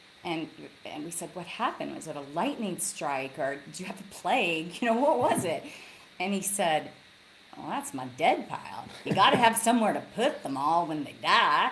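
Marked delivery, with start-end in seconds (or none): 7.7-11.7 put-on Texan rancher's way of speaking, Texas accent. Quoting a rancher's reply, Texas accent. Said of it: "that's a Texas accent, but I just automatically segued into it".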